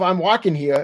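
normal talking voice

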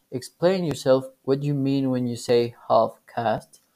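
plain

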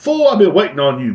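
calm, high woman's voice. Retelling a chat with a tax preparer, imitating the tax lady's voice. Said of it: "that was her voice".

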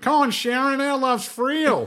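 put-on high, loud Australian bogan woman's accent. Urged by the group to do it, performing the Bogan woman accent. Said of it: "You gotta do the Bogan woman accent".

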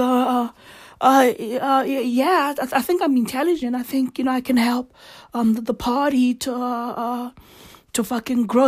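halting, stumbling put-on stammer full of uhs. Imitating own answer to threatening party members: mock stammering. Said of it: "And I'd be out there like".

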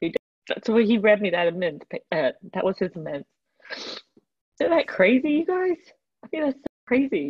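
crying while talking. Telling a group how her husband read his amends, crying while talking. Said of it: "I'm sorry I'm crying so much".

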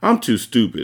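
plain

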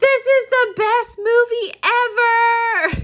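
play-acted very high, very slow excited scream, ever stretched. Speaker retells a boy screaming in a movie theater mid-film; retelling an excited scream. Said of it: "he just screams".

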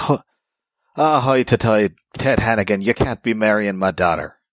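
exaggerated comic Irish accent. Describing a 70s comic's dialogue, voicing a character in a phonetic comic-book irish accent. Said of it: "phonetic Claremont-style Irish accents".

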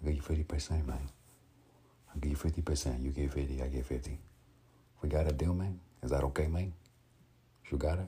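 English with a Cuban accent. Speaker shows the Cuban accent he studied, Tony Montana Cuban accent. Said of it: "he's a person that I studied a Cuban accent from".

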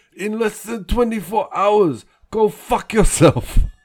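high, shrill, blaring, very loud pro wrestler voice. Reading out a favorite from the wrestler's Twitter account, do it in an Iron Sheik voice. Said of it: "I'll try and do it in Iron Sheik voice".

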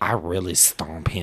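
mock soft feminine voice. Speaker mimics a player's trash talk: effeminate Jalen Ramsey impression. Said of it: "It's the feminine voice".

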